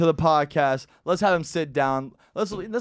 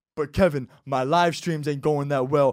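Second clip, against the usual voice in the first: put-on wallowing voice with bass. Retelling complaining to a friend about work: imitating wallowing with bass in voice. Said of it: "wallow to another man with bass in your voice".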